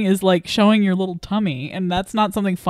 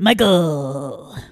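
put-on radio DJ voice, lower pitch; 3 semitones lower than usual. Showing the other speaker an impression after being praised: Will Arnett impression. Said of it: "That's my impression".

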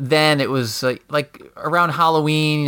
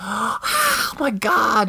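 shocked, high, swooping scream of alarm; 8 semitones higher than usual. Retelling the wife seeing a fake stabbed body: imitating a scream. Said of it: "she screams".

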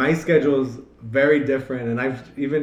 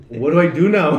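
put-on confused tone, higher and louder; 3 semitones higher, 7 dB louder than usual. Retelling calling a friend after passing the tests: imitating own confused self. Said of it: "I was so confused".

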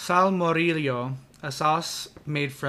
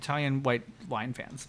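ordinary talk

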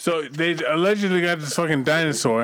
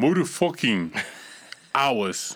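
Jamaican accent for one line; 3 semitones lower than usual. Telling a story about a six-hour nosebleed: Jamaican accent. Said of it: "let me say it like a Jamaican".

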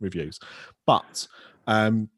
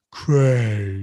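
put-on sad voice, louder; 6 dB louder than usual. Imitating a friend's voicemail greeting: imitating Craig's sad voicemail. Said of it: "When you phone your voicemail, it goes".

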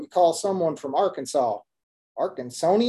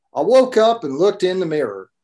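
loud, big put-on Texas accent; 5 dB louder than usual. Reading aloud from a book, in a put-on texas accent. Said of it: "I gotta take a second to get my Texas accent on".

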